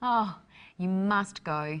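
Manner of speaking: slow, warm-hearted, enthusiastic delivery.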